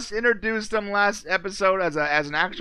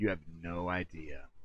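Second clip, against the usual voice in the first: low, soft, sinister evil villain voice. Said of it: "Straight up evil".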